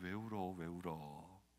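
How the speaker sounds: soft comforting tone. Showing how we go to someone who is crying, comforting someone crying. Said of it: "우리가 찾아가서 위로합니다".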